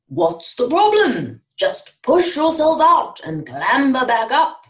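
loud, high trumpeting call at full volume. Mandleve calls advice to a small one stuck in the mud: trumpeted at full volume. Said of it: "trumpeted out at full volume".

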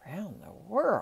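dumbfounded, astonished, dazed tone. Narrator reading Passepartout, overcome after his master's announcement: murmured in astonishment. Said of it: "he murmured".

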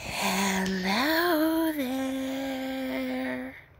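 very high animatronic ballerina voice, drawn-out "there". Reviewing game characters' voices, doing a Ballora voice. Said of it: "Ballora's voice is also pretty cool".

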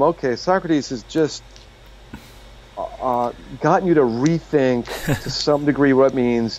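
ordinary talk, nothing marked

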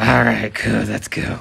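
put-on monster voice. Told again to use the Venom voice, agreeing to go train, Venom voice. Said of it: "Use Venom voice".

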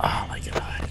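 exasperated, soft, unvoiced whisper.

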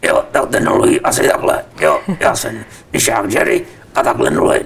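deep puppet voice. A puppeteer, asked about his other deep voice, demonstrates it: Mišák Jerry deep puppet voice. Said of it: "který říkáte hlubokým hlasem".

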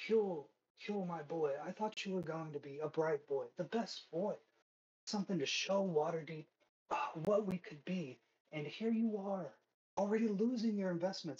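hushed whisper, very close. A voice behind the listener, hand on their shoulder, whispering in their ear. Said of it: "he's whispering this in your ear".

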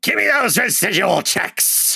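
rasping cartoon voice. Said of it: "cartoony rasp of a voice".

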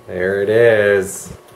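dramatic pause, slow and drawn-out dramatic delivery. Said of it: "it's a dramatic pause".

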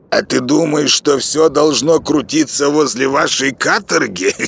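mocking tone. A character answers a companion puzzled by the quiet, asking mockingly. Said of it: "Насмешливо спросил Плюха".

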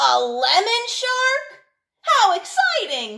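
very slow, very high, delighted and excited shout. The Tooth Fairy, having just read a letter, reacts aloud: shouted. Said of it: "she shouted".

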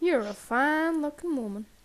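put-on mock country accent. Repeating a game line after another player calls it redneckish: put-on redneck voice. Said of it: "He sounded really redneckish".

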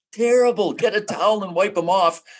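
high-pitched screaming. Retelling what a man screamed at a woman in a locker room, retelling a scream. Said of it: "He's screaming".

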